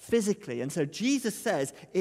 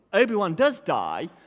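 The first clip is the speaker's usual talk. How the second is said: plain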